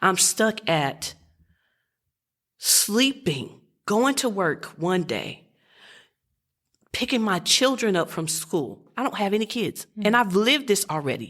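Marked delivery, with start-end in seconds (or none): 0.0-8.8 voice near tears, fighting not to cry. Speaking about feeling for people living through war, holding back tears. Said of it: "I'm trying not to cry".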